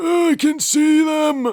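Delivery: very high, loud, wheezy robot voice. Speaker imitating a robot character from a show, imitating a wheezing voice. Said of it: "He sounds like he's wheezing".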